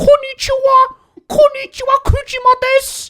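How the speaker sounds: very high, very loud squeal. Showing how an annoying bird character in a show talks: imitating the Kujima character's voice. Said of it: "And he speaks like this".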